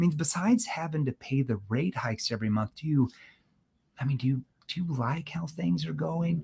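skeptical, concerned tone. Demonstrating how tone shapes a question, asking it in a lowered voice. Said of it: "I'm lowering my voice".

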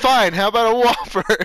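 sudden, loud, high, yelled-out blurt. Retelling what he yelled out as the ordering was almost over: retelling a yell. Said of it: "he yells out".

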